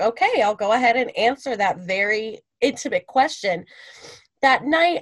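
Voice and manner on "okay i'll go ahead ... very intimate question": plain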